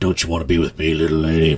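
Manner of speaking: low, sleazy, creepy-sounding voice. Retelling a character cornering a woman outside a saloon: imitating Billy Roy's creep act. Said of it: "tries to do the creep boy thing".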